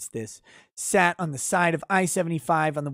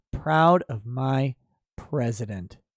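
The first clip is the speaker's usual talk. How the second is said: put-on contemptuous, utterly disgusted reading; 5 semitones lower than usual. Reading aloud a line praising the president: utter disgust and contempt. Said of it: "I read that with utter disgust and contempt".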